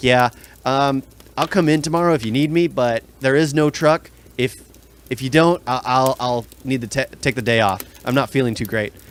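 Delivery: ordinary delivery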